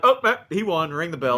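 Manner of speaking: high, offhand referee voice. Mocking how the referee ended the match: imitating the referee. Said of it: "he's like".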